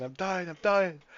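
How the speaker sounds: full-on screaming, very loud and high. Narrating a game where you got stunned in poison, retelling a scream. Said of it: "so I'm screaming".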